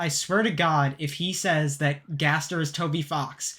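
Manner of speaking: plain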